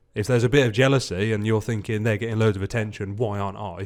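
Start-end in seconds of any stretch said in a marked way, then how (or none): none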